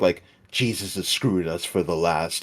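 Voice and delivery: deep, gravelly voice. Imagining a man saying something epic: husky, deep voice. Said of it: "in his husky, deep voice".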